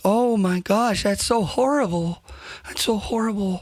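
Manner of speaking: put-on, very meek voice. Retelling how the people questioned them talked, imitating a meek 'oh, hi' voice. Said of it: "talking in this like real, real meek".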